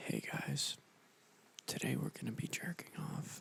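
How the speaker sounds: soft, breathy, whispered ASMR voice. Asked to talk in an asmr voice, the speaker tries it: asmr voice. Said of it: "Can you talk in an A S M R voice?".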